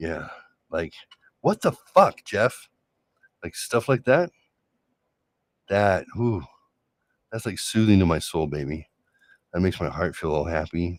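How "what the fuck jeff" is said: high-pitched, angry snapping retort with cursing. Retelling how his partner snaps at him: imitating an angry snap. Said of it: "tone and a cuss word".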